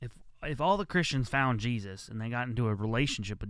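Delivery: ordinary talk, nothing marked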